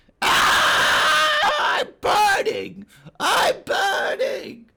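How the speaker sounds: shrieking lizard cry, very high, very loud, pained. Voicing a lizard burning inside a blazing tree: screeching lizard in pain. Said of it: "lizard inside begins to screech and writhe in pain".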